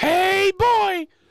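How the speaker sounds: very high, hoarse, squeaky cartoon-mouse voice. Speaker defending an imitation to Rogers, imitating Little Bit's voice. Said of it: "a perfect imitation of Little Bit's voice".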